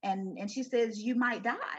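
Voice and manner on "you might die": put-on crying child voice. A mother retells what her twin daughter said, imitating Kayla crying. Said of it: "And she's crying".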